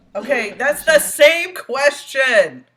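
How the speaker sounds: full-on yell, very loud, high-pitched. Objecting that the same question was asked again, yelling. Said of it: "Sorry, I didn't mean to yell".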